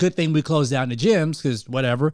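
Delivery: ordinary delivery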